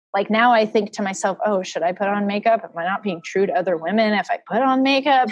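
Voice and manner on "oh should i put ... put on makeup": usual speaking voice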